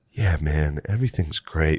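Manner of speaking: very flat, level, droning monotone. Recalling hallucinating while someone talked, imitating Butterly's monotone. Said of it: "Like this real monotone thing".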